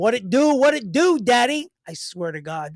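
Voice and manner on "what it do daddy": put-on Bronx accent, higher and louder. Quoting the guy he's talking to coming in the door, imitating a Bronx accent. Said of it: "He comes in the door and he goes".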